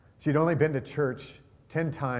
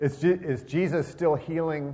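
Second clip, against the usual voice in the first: plain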